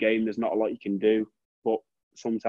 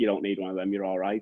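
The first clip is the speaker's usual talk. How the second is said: snarling, dismissive brush-off; 3 semitones lower than usual. Retelling what the kit man said on the first day: imitating a snarl. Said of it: "he just looked at me and snarled me and went".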